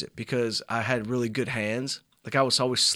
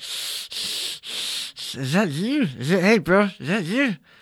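put-on clenched-jaw voice, higher; 7 semitones higher, 4 dB louder than usual. Doing the impression again on request: imitating man with jaw wired shut. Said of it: "You gotta do his breathing again".

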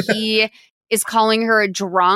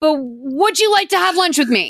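put-on forceful, pressing, aggressive and pushy; 5 semitones higher than usual. Recapping a scene where Robert comes by for the rent, mock-aggressive as Robert. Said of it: "the way he says it is so aggressive".

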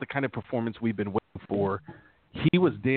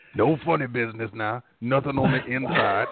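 mock cartoonish cowboy voice; 3 dB louder than usual. Imitating Andrew Whitworth answering a masseur: Andrew Whitworth sounding like Yosemite Sam. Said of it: "sounding like Yosemite Sam".

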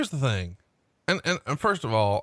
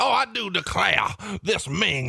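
pitched-up, creaky southern gentleman voice, a touch high; 7 semitones higher than usual. Play a figure patting his forehead with a handkerchief, in a Colonel Sanders meets J.R. Ewing voice. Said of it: "patting his forehead going".

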